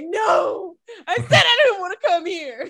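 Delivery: put-on very high, tearful, fake sobbing voice. Imagining being in a scary movie scene: mock crying. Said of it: "That would be me crying like".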